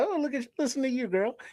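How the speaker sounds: put-on charming, hushed Georgia southern belle accent. Describing the accent heard in georgia and tennessee, doing a southern belle accent. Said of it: "it's like the Southern Bells".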